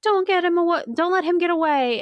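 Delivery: loud shouting, pitched high.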